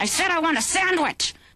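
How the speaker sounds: talking through gritted teeth. Showing how people talk after years together: imitating a tight clenched jaw. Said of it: "Pretty soon you start talking like this".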